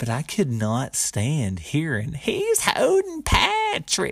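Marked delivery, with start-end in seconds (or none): 2.1-4.1 mock shrill, swooping woman's yell, very high. Recalling what a woman kept yelling during a game; imitating a woman's yell. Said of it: "she was yelling it".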